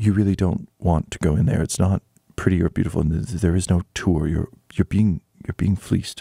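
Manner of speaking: sneaky, conspiratorial, low, stealthy stage whisper. Lopsy leans over to Quinny from behind the counter, whispering stealthily. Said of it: "and whisper uh, very stealthily".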